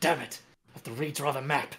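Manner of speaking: cursing muttered under the breath. A player voices his character as the party runs, cursing under his breath. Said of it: "he just curses under his breath".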